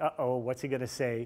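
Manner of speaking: ordinary talk, nothing marked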